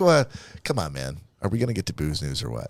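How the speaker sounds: mock uninterested, low, bored, impatient delivery. Voicing Todd during the baby talk, imitating Todd, uninterested. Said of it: "Look how uninterested Todd is".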